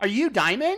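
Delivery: scornful waitress voice. Retelling what a waitress asked, mocking imitation of a waitress. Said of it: "I'm mocking her".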